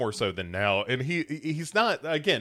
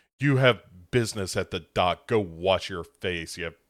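put-on condescending tone, lower pitch; 5 semitones lower than usual. Retelling a show scene where a character dismisses his son: imitating a condescending tone. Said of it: "condescendingly is like".

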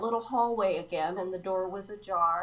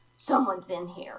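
put-on nasty tone. Retelling what a voice behind the bathroom door said: imitating a mean voice. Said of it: "this really super mean voice said".

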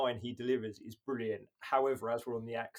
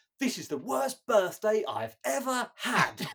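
put-on London accent, very high-pitched and loud; 12 semitones higher, 7 dB louder than usual. Speaker quotes a character's line while discussing her: London accent. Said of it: "it's such a london accent".

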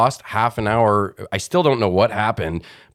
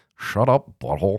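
cartoonish teenage slacker voice. Asked to show the cartoon voices they can do: Beavis and Butthead voice. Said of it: "I can do like Beavis and Butthead".

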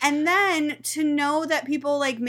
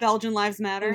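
ordinary talk

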